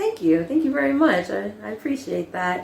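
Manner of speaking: ordinary talk, nothing marked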